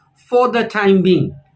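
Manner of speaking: ordinary talk, nothing marked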